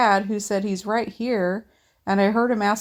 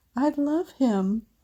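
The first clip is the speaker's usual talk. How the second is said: shaky, trembling whisper, higher; 4 semitones higher than usual. Reading a post aloud about a toddler staring at a toy: shaky whisper. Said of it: "then whispers, his voice shaky".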